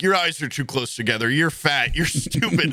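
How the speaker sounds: put-on drunken voice, riled-up and dialed-up. Retelling a friend threatening guys at a bar: imitating a riled-up friend threatening. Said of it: "dialed up to eleven".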